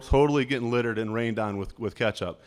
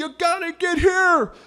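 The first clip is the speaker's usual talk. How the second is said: mock very high, drawn-out enraged outburst; 4 dB louder than usual. Retelling the coach's reaction after the JV team gained yardage: imitating a coach going ballistic. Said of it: "Coach goes ballistic".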